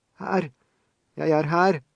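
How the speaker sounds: high, slow, half-choked shout, fighting for breath. An injured woman, gasping for breath, calls up in a half-choked shout. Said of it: "Til slutt fikk hun til et halvkvalt rop".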